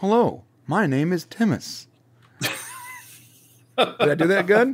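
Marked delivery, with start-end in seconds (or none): 0.0-1.9 upgraded, machine-like robotic voice. Describing a character's upgraded father, speaker demonstrates how he now talks: Timus voice. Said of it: "he talks like this".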